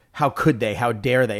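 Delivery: ordinary talk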